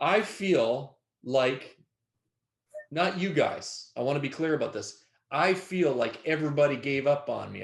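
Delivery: voice catching, choked-up, tearful, close to crying. Speaking to the people with them, choking up, about to cry. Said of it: "I'm going to cry".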